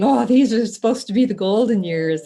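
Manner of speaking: wry, sarcastic, mocking tone. Quoting what people often say: imitating people speaking sarcastically. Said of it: "I hear people sarcastically saying".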